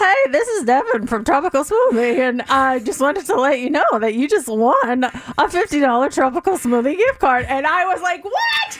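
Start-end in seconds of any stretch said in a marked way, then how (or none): 0.0-7.4 cracky voice, cracking on the words. Retelling a prize phone call from Devin, cracky voice as Devin. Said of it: "with a cracky voice".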